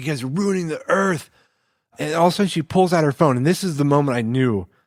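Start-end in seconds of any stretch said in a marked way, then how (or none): 0.0-1.3 mock furious screaming in a woman's voice. Retelling how a woman screamed at the group, imitating her screaming. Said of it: "just screaming at us".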